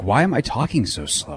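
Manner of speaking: normal talking voice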